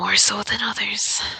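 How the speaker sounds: half-whispered, hushed delivery. Role-playing a character who rubs her arm while answering, in a bit of a whisper. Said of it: "just kind of be like in a bit of a whisper".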